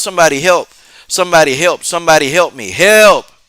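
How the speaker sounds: frantic, desperate, repeated yelling. Recounting a man being choked who yelled out: retelling a yell for help. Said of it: "he yelled out".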